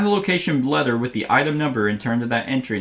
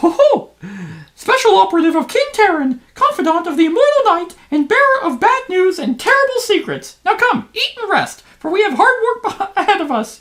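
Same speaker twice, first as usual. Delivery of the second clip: very high pitched, loud cartoon voice; 7 dB louder than usual. A game master voices a friendly halfling greeting the party, in a Mickey Mouse voice. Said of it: "He's Mickey Mouse".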